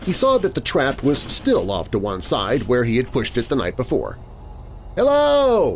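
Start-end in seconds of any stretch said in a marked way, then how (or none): 5.0-5.8 very high, shrill shouted call. Hearing the broom outside, he walks out the front door: shouted. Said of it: "he shouted".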